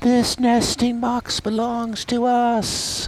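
tiny, very high small bluebird voice. Speaker voices huge imagined bluebirds, in a small bluebird voice. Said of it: "maybe they still have small bluebird voices".

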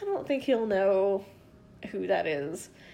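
ordinary delivery

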